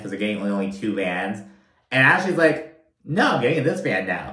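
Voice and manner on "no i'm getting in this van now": ordinary talk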